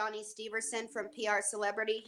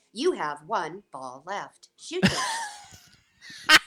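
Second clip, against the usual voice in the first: loud, animated arcade machine computer announcer voice; 6 dB louder than usual. An actor recalls voicing a pinball game, doing its pinball game computer voice. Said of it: "I'm the computer voice that talks to you".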